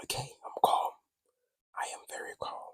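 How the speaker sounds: hushed, breathy, barely voiced whisper. Telling themselves to stay calm, the speaker talks in a whisper. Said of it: "Why am I whispering?".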